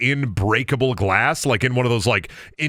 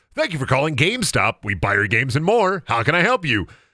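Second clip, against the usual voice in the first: put-on robotic phone system voice, higher and faster. Retelling answering prank calls at GameStop, imitating an automated phone system. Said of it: "I got the robot".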